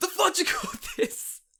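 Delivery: put-on screaming chef voice. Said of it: "Gordon Ramsay screaming at you from the kitchen".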